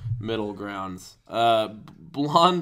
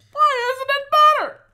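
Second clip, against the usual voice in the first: tearful, sobbing, crying voice, pitched very high; 4 dB louder than usual. Mocking the person you are talking to by acting out their complaint, crying Jerry Seinfeld impression. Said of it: "You sound like a crying Jerry Seinfeld".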